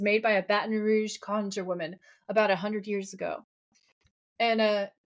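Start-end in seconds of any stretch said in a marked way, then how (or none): none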